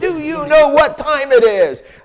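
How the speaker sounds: very high, loud scream at the top of the lungs.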